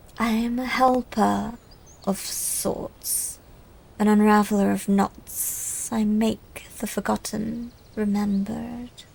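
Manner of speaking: weighty, heavy, slow serpent voice. Storyteller voicing a snake with a crystal ball, speaking to a skeptic: low, heavy snake voice. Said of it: "The snake's voice drops low".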